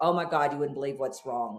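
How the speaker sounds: put-on alarmed announcer delivery. Imitating someone walking in with bad news: imitating an alarmed announcement. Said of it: "there's nothing more alarming than someone walking in and go".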